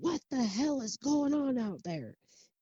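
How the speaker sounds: very high, barking drill-sergeant holler. Retelling a story, imitating a former military sergeant's scream: retelling a sergeant-voice scream. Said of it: "she screams out in her sergeant voice".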